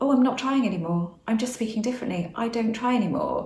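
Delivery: ordinary delivery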